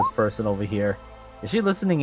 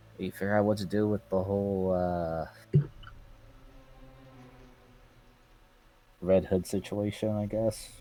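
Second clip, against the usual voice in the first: lowered voice, much quieter, slower; 9 dB quieter than usual. In a role-play, a character suggesting a plan to the group: lowers his voice a bit more. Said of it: "Jacko kind of just lowers his voice a little bit more".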